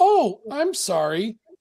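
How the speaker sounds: as bubbly and cheerful as can be. Voicing a character who apologizes for taking a seat: bubbly. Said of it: "Totally as bubbly as can be".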